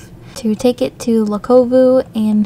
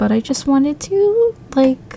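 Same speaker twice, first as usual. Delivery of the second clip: voice cracking and breaking mid-phrase; 3 semitones higher than usual. Speaker addresses viewers of a game playthrough, voice cracking. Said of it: "My voice cracked there".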